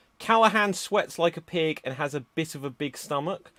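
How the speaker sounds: ordinary talk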